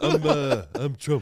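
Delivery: halting, faltering put-on voice. Answering a request to do an impression: Trump impression. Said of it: "Can you do a good Trump?".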